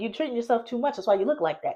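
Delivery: fast, rattled-off, cutting and mean. Imitating how she talks on live: imitating her fast, mean talk. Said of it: "That's how she talks".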